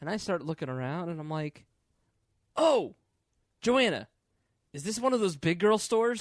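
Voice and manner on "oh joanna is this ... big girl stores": boisterous, high-pitched, loud yelled exclamation. Retelling exclaiming loudly in a store to a girlfriend: retelling a loud exclamation. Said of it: "You just yelled that in a Lane Bryant?".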